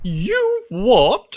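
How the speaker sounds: upper-class, posh British man voice. Performing a line after being asked to talk as a posh british man. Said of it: "Talk as a posh British man".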